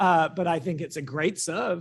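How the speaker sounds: ordinary delivery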